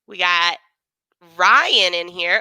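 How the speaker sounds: slow voice, breaking and cracking mid-line. Reading out the names of people who have joined, voice cracking. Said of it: "voice crack".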